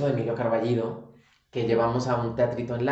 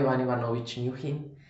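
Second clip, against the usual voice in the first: ordinary talk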